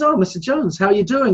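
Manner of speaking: speaking loudly. Telling a joke, acting out the doctor greeting his patient in a loud voice. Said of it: "he kind of speaks in a loud voice".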